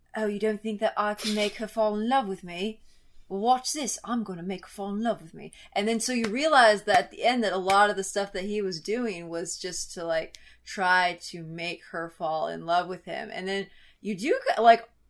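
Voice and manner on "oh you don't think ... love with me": imitated British accent. Retelling what a film character says: imitating a British accent. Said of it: "British accent".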